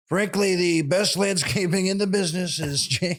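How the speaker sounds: high, salesy TV commercial pitchman voice. Retelling a landscaping commercial voiced as Donald Trump: Donald Trump impression. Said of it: "landscaping commercial for, uh, Ask Trump".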